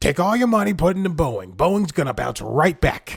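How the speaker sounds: very loud, high yell at full volume. Joking about a shouting money show: Jim Cramer impression. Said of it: "my best, um, Jim Cramer impression".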